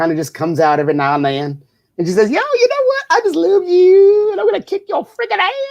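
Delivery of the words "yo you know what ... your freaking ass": put-on very high-pitched Pittsburgh accent with slight Southern drawl. Parent quotes what their oldest daughter says: imitating Kaylee's Pittsburgh-Southern accent. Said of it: "she does have a Pittsburgh accent with a little Southern drawl".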